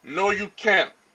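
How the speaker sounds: plain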